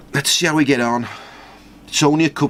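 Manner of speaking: Scouse Liverpool accent, Liverpudlian. Commenting on a team lineup before a cup match, in a Liverpudlian accent. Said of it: "why are we talking in a, a Liverpudlian accent constantly?".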